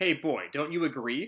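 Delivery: plain reading voice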